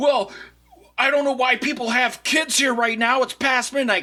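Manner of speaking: mock, very high-pitched, huffy and defensive voice. Retelling how a man at the bowling alley answered being told off, imitating a defensive guy. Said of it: "starts getting all defensive".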